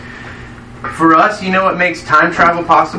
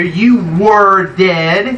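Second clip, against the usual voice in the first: slow stress on you were dead, dead drawn out, rising. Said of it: "look at those two words".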